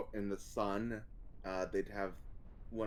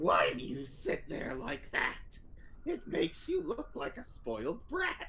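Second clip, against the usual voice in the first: very high, scary, terrifying raspy voice; 4 dB louder than usual. Quoting a man who had a voice issue that day: terrifying raspy voice. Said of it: "this terrifying raspy voice that sounded like".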